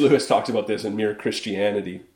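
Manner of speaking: normal talking voice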